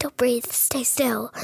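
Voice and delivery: soft, hushed whisper under the breath. Retelling a ride where someone speaks: imitating a whisper. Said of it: "someone's whispering, like".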